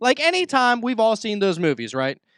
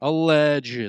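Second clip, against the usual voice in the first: low, stretched-out, heavily loaded "allegedly"; 4 semitones lower than usual. Discussing the moon landing with another speaker, drawing out 'allegedly'. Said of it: "We say that with a strongly drawn out".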